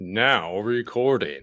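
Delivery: amateurish attempt at an announcer voice. Trying out an internet-style announcer voice for a recording, in a mock announcer voice. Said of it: "tries to do an announcer voice".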